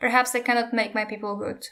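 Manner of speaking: ordinary delivery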